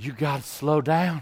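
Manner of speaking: put-on Deep South, Alabama and Mississippi accent. Retelling what audiences in Alabama and Mississippi say: imitating Alabama and Mississippi listeners. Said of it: "when I speak in Alabama and Mississippi, they go like this".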